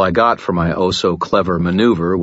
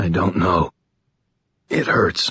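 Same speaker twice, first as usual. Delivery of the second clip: feeble, weak, trembling, shaking voice. A man who has been shot answers his companion, weak and shaking. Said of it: "his voice weak and shaking".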